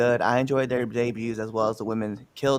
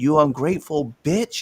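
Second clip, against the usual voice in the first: play-acted, spat out forcefully with whole chest; 4 semitones higher than usual. Retelling a wrestler's insult: imitating a line said with her whole chest. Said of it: "He said it with her whole chest".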